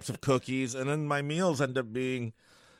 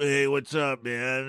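slow, laid-back put-on cool dude voice; 3 dB louder than usual. Acting out a relaxed walk, greeting someone slowly: slow put-on cool dude voice. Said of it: "just take it all slow and then act like I'm, um, the dude".

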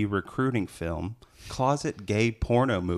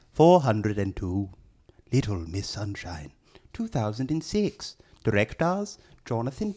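stuffy put-on British accent. Reading a British film magazine's blurb as its writer, in a stuffy British guy voice. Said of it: "He's going to read it in a stuffy British guy voice".

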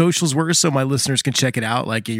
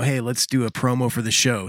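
plain

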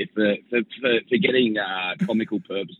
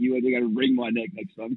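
ordinary delivery

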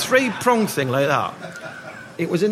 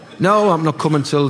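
ordinary delivery

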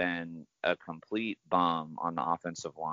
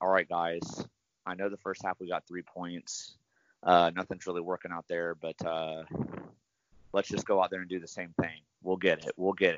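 ordinary talk

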